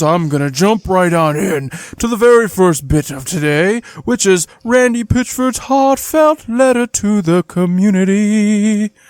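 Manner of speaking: high, eerie, ghostly put-on spooky voice. Introducing today's first bit to the community, in a spooky voice. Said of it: "So with a spooky voice".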